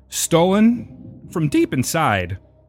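very slow, strangely paced, swooping high celebrity voice. Joking mid-conversation with a line about something stolen: Christopher Walken voice. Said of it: "I don't know why I went with the walk-in right there".

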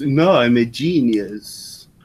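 very slow, affected, grandiose put-on director voice. Quoting what the director of The Room says: imitating a film director. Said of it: "That's actually a pretty good impression of him".

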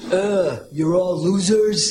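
put-on blustery politician voice. Joking about a politician in a sketch: Donald Trump impression. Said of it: "her Donald Trump impression".

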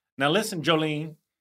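put-on Southern voice.

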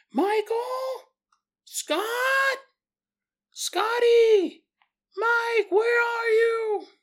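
play-acted, very high, stretched-out, drawn-out scream. Retelling a mother searching for her sons at night: imitating a mother screaming. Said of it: "hears his mother screaming".

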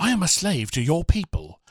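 put-on British accent, swooping in pitch. Retelling a beach scene, quoting Samson in a British-accent impression. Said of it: "that's a really good impression".

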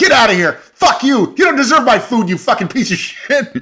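high-pitched, screaming, yelling chef voice. Describing favorite clips of chefs yelling at customers: imitating chefs yelling. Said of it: "yelling at customers, like".

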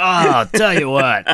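TV football commentator voice. Repeating the phrase after joking about sounding like him: Chris Collinsworth impression. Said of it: "I sounded like Chris Collinsworth for a second there".

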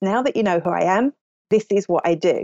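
plain

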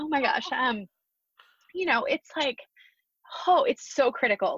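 emotion rising mid-sentence, moved. Recalling a grandfather's advice after a wedding, getting emotional. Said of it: "I'm getting emotional".

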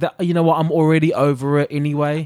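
ordinary talk

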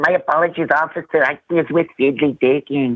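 loose, lazy put-on Mexican accent. Doing a voice for his friends: lazy Mexican-sounding accent. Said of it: "kind of sounded like a lazy Mexican".

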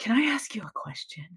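fast, soft, hushed whisper.

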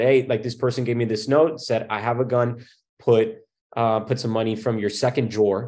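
ordinary delivery

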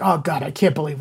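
fake gruff grumbling. Describing Eddie's dad grumbles, Eddie's muttered dad grumble. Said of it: "under his breath, but not under his breath".

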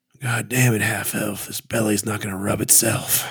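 sniffing creature voice. Voicing a creature that rolls over for a belly rub: talking beast voice. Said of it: "and he says".

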